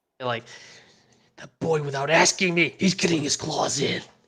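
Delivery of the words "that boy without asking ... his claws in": put-on menacing, threatening growl. Recapping a show scene, quoting a character who switches to a mock menacing growl. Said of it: "to a menacing growl".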